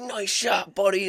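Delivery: acted, very high-pitched, carrying hollered scream. Retelling how an uncle screamed across the woods after a shot: imitating Uncle Dub screaming. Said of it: "he screamed across the woods".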